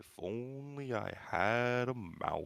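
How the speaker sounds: very slow, dragging voice, every word drawn out. Voicing a mouthless mechanical creature as a game master: Eeyore voice. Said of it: "This is my Eeyore voice".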